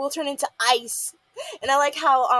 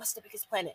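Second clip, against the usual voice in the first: very quiet whispered aside under the breath; 4 semitones lower, 12 dB quieter than usual. Retelling a cartoon scene where one character asks another a question: imitating a whisper. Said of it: "he whispers to Molly".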